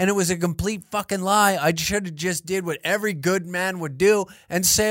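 ordinary delivery

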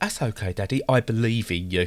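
put-on sarcastic tone of voice. Retelling what Edith said when the speaker couldn't see: imitating Edith sounding sarcastic. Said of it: "You sounded really sarcastic".

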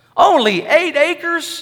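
high, condescending, dismissive, scornful scoff. Telling a joke, as a texan answering a farmer, scoffing. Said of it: "scoffed the Texan".

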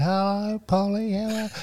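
put-on very high, dazed and delirious voice. Recalling lying down looking up at a player before a game, retelling a delirious voice. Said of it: "I think in a delirious voice".

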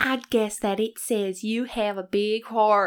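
terrible, awful fake put-on Southern accent. Repeating the heroine's line after being told to pick one accent: awful Southern accent. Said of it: "It's so awful".

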